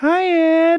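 tiny, very high, cutesy little voice. Retelling how she would greet him on the phone: little cutesy voice. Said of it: "She had a little, little, little cutesy voice".

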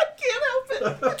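very high, slow, laughter breaking through words. Answering a request to stop laughing, laughing while talking. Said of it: "Stop laughing".

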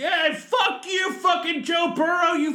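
play-acted high, drawn-out, heckling scream. Imagining a fan heard through a two-way TV: imitating someone screaming. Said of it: "someone's screaming".

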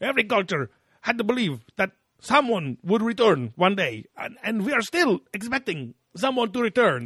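animated swooping delivery. Quoting an interviewee from the episode: animated Von Daniken impression. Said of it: "He's very animated this episode".

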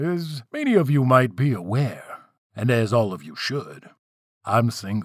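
ordinary delivery

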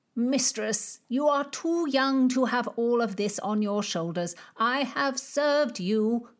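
high, pleading, imploring, begging tone. A steward being shown out begs his young mistress, begging. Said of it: "The puffy old goat held himself with righteous authority. / The puffy old goat held himself with righteous authority. / What kind of a man blames a sick woman? / The puffy old goat held himself with r".

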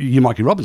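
plain

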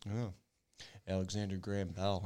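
mock, a touch smug, sure, know-it-all tone. Retelling how a father answered quiz questions: imitating dad's half-smug answer. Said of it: "He'd give his answers like".

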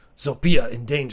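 put-on simple, blunt caveman talk. Storyteller voices a caveman character met in the story: caveman voice. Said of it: "so I should just do caveman voice".

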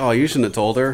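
ordinary delivery

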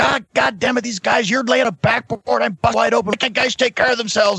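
very high-pitched, ranting wrestling promo style. Retelling a bleeding wrestler ranting backstage: imitating Jerry cutting a promo. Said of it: "he's cutting a promo".

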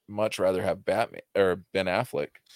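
normal talking voice

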